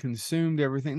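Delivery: ordinary delivery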